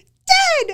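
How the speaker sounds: very high, loud, squeaky put-on shout. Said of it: "I'll just go".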